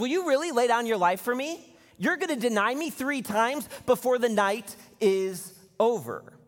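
gentle, playful mocking, teasing tone. Retelling a Bible scene where one man mocks another: imitating a mocking tone. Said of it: "Jesus kind of makes fun of Peter".

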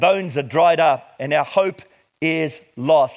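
slow, heavy stress on hope is lost. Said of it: "Underline the word hope is lost".

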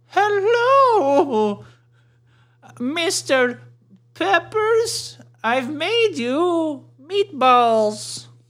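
put-on very high-pitched older lady voice. In an improvised scene, playing the older lady visiting someone's office: older lady voice. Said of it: "so I'm the older lady".

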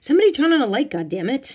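loud, high-pitched, demanding shout. In sudden darkness after the car engines cut, a passenger is shouting. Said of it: "Italian Bob shouted".

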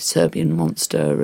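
low, slow, mock-outraged angry commenter voice.

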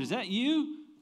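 play-acted very high, hollered calling-out voice. Retelling calling out to a person pushing a stroller, retelling a holler. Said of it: "I just hollered".

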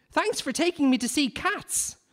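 put-on very high, thrilled, delighted child voice. A nine-year-old [name] leaving the theatre with his dad, delighted nine-year-old. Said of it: "said a delighted 9-year-old [name]".

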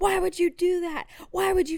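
mock screaming. Retelling how their mom screamed at their sisters in the car, retelling mom's screaming. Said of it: "she immediately starts screaming at my sisters".

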